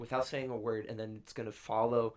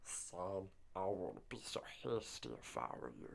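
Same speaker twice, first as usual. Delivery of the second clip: slow, drawn-out creature voice; 4 semitones lower, 11 dB quieter than usual. Acting out a line from a fan plot prediction: Cad Bane voice sounding like Gollum. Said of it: "I don't know why I made him sound like Gollum".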